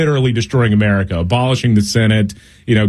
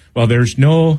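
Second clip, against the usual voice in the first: bad put-on Irish accent, pitched higher; 4 semitones higher than usual. Imitating a TV reporter described as a little Irish guy: terrible Donie O'Sullivan Irish accent. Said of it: "That's a terrible accent".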